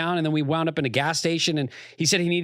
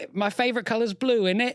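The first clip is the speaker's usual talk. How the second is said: put-on British accent, higher pitch; 6 semitones higher than usual. Urging the other speaker to try one, demonstrating a british accent. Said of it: "do your British accent".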